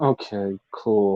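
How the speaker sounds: put-on sad unexcited voice. Retelling a wrestler's reply to an offer of help: imitating a sad, unexcited reply. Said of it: "it was just all sadness. There was no excitement".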